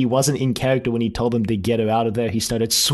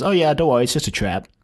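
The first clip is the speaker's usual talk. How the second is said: really nonchalant, offhand, totally unbothered. Retelling the Doctor's reply after a door closes behind them: imitating the Doctor nonchalantly. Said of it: "really nonchalantly goes".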